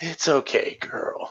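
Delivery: put-on whispered, soft, breathy, very old man voice. Playing an old man petting Mittens in the reception area, very old man accent. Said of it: "like in a very old man accent".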